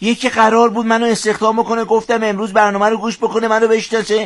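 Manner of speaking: high, whiny, complaining tone.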